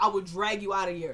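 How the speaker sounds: ordinary delivery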